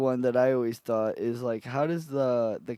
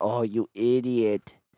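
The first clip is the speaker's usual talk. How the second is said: put-on cartoon Mexican accent. Imitating how a cartoon chicken talked: imitating a cartoon Mexican guy. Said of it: "didn't he talk like that?".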